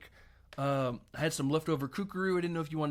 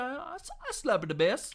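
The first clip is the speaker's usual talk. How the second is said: put-on reggae accent, much higher pitch; 9 semitones higher than usual. Retelling how a guy claimed he plays bass, in a reggae guy voice. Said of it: "I was doing a reggae guy".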